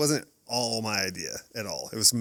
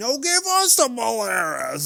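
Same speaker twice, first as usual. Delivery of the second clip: put-on very high, swooping, drawn-out old man yell; 13 semitones higher, 7 dB louder than usual. Telling a story, the speaker imitates an old man yelling at someone. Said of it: "now the old man is yelling".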